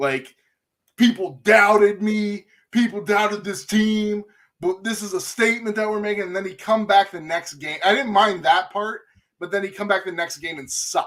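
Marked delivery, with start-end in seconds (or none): 1.0-6.2 brash, cocky, boastful trash-talking tone. Complaining about a quarterback boasting after a good game, mimicking Baker Mayfield trash talk. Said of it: "just talk a bunch of shit".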